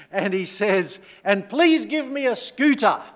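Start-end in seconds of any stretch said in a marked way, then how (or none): 1.2-2.9 very loud, high, outdoor-voice yell. Telling of a boy at evening prayers suddenly switching voices: retelling a boy's outdoor-voice yell. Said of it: "he started using his outdoor voice".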